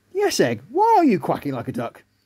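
plain reading voice

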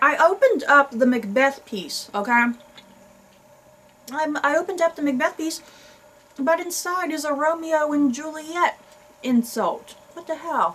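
words worked around gum, talking mid-chew. Speaker addresses viewers while opening a gum piece, talking while chewing gum. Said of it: "it's hard to talk and chew gum at the same time".

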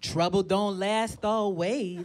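put-on, low, old-fashioned Southern dialect. Speaker retells a Midwestern acquaintance's reply, mimicking old-time Southern dialect. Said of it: "Why do you sound like a 200-year-old dead slave?".

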